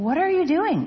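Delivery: anxious, nervous, high-pitched cry. One of the cave people calls to a stranger in the darkness, nervous cry. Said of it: "one cried, nervous".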